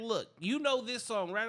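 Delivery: ordinary talk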